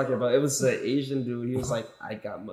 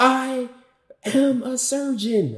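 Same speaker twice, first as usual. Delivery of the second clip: very high, very slow, erratic, drawn-out screaming; 11 semitones higher, 6 dB louder than usual. Explaining what made a clip funny, quoting its repeated line: imitating erratic screaming. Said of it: "somebody screaming erratically saying".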